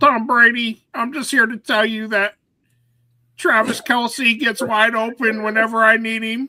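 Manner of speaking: cartoonish, high-pitched, loud puppet character voice. Co-host does a comic bit on the show, in a Muppet voice. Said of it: "Is that the Muppet voice?".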